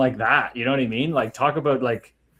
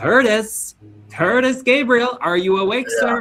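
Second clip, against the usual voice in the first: wacky, crazy, weird, pitched-up oddball voice; 9 semitones higher, 4 dB louder than usual. Retelling a coach's morning wake-up call: imitating a crazy, weird voice. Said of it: "crazy, weird voice".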